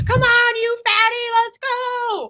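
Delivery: very high, shrill, dragged-out screaming yell. Retelling screaming at oneself in the gym: imitating own screaming. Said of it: "I'm screaming at myself in the gym".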